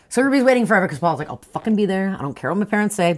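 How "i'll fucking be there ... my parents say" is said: usual speaking voice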